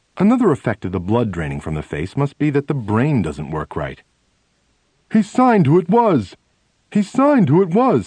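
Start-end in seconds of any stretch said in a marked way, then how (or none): 5.1-8.1 completely shaken, very high-pitched, loud outburst. A man, stunned by what he has just grasped, speaks out, completely shaken. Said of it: "completely shaken".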